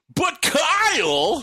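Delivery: name stretched out, exaggerated, animated, very loud and high. Imitating Kyle Kinane referring to himself in his act: over-the-top animated Kyle Kinane impression. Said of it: "it's always like an over-the-top animated".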